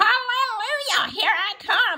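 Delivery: very high, long, stretched-out shout. A grandma rising up through the bedroom floor calls to her grandson, shouting. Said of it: "She shouted".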